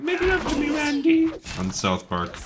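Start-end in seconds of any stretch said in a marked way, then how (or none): 0.0-1.3 very high, pleading cartoon lady voice. Quoting a lady from an old episode, in a South Park lady voice. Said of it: "I was doing the voice when the lady's like".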